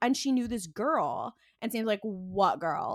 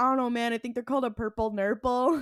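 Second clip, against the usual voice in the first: imitated drunk-sounding speech. Retelling a TV scene where a character talks drunkenly: imitating drunk speech. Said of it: "he's drunkenly saying all this".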